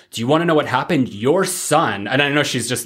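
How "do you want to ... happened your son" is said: mock-scolding, reprimanding tone. Speaker retelling a woman reprimanding Ellis about his son, imitating a reprimanding tone. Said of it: "she's reprimanding".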